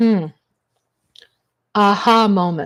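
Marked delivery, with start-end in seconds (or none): none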